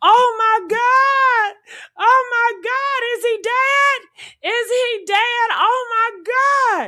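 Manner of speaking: put-on very high panicked shriek, "my" drawn out. Describing a girl's voice heard on the boat, imitating panicked screaming. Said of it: "she was panicking, she was terrified, she was screaming".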